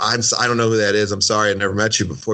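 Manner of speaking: plain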